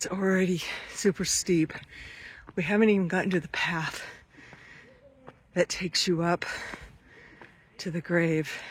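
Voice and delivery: breathless, huffing and puffing. Climbing a steep hill toward a grave, out of breath. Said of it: "you can hear me huffing and puffing".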